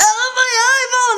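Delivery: put-on frantic, panicked cry, pitched very high. Retelling a stuck lens in the eye: imitating own panicked cry. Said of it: "I'm just freaking out".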